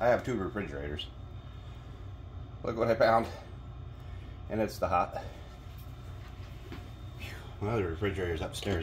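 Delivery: breathless, winded chatter between gulps of air. Back from fetching sauce from the upstairs refrigerator, the speaker talks out of breath. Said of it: "That's why I'm out of breath".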